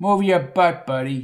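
usual speaking voice

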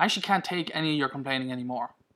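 ordinary talk

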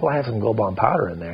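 normal talking voice

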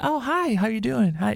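put-on hot-girl voice. Showing how a guy's voice changes when a hot girl approaches: voice going up. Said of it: "It automatically goes up".

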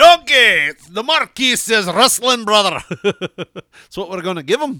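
put-on loud, high, belted Scottish accent. Speaker imitating a Scottish guy she watches, slipping into a Shrek voice. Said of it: "I turned him into Shrek".

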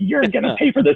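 high, campy, menacing put-on wicked witch voice. Retelling a movie scene where she chases a driver: imitating a wicked witch drag act. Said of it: "doing her best, like, wicked witch drag".

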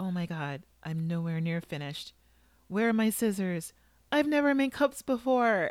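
tiny, fretting voice in full panic, rising pitch. Retelling how Helen panicked, the speaker quotes her; imitating Helen's tiny voice. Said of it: "is speaking in tiny voice".

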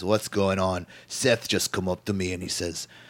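bad Scottish accent, soft and quiet. Recapping a wrestling show, acting out Drew McIntyre backstage in a bad Scottish accent. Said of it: "I went from Scottish to like Middle Eastern".

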